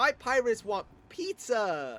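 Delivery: put-on very slow, high, happy cheerful delivery. Holding two pirates up in the rear-view mirror for her to see: retelling a big-smile line. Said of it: "with a big smile on my face".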